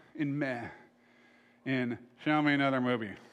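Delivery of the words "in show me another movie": put-on apathetic, indifferent voice, lower pitch. Describing apathy, imitating Glenn saying it: Glenn impression, apathetic. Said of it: "that's not me that I'm doing an impression of".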